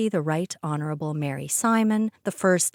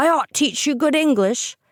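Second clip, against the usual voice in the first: put-on loose, rough, raised non-posh English accent; 8 semitones higher, 5 dB louder than usual. Quoting a man who felt superior to Canadians, imitating his non-posh accent. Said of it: "I'm not replicating his accent accurately".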